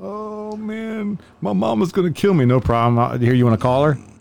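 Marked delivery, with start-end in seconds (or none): 0.0-2.4 very high, very slow, drawn-out crying. Retelling what some dudes say after a search: imitating someone crying. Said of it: "they'll start crying and shit".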